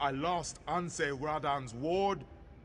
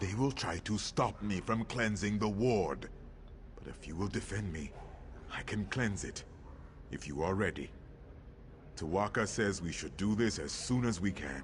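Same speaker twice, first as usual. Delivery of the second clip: put-on werewolf monster voice; 8 semitones lower than usual. Player voices a game character's dialogue aloud: werewolf voice. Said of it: "Trying to do like a werewolf voice".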